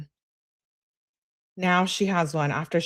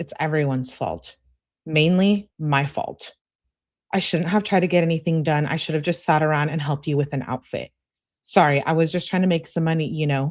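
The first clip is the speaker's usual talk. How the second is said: plain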